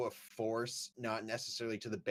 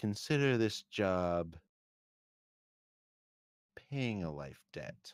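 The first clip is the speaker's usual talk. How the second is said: in a whisper; 3 semitones lower than usual. Game master voicing a character who leans into Bard and whispers, whispering. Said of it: "leans into Bard and whispers".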